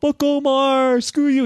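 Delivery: shrill, very high, drawn-out obnoxious heckling yell. Retelling what a loud player kept saying during pairings: imitating someone yelling. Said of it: "He was the loudest".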